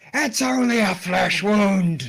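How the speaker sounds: loud, high-pitched, acted in-character shout. Voicing a character rallying a fallen ally: shouting in character. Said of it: "Shouts Randolph".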